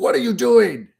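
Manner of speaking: very high-pitched, loud, angry outburst. Retelling a story of a climber finding Sherpas sitting: imitating an angry Edmund Hillary. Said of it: "all mad".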